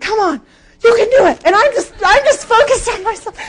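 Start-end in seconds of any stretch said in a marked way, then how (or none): 0.0-1.4 mock yelling, much higher. A slow runner retells cheering themself on past people walking, retelling own yelling. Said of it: "And I'm yelling this out to myself".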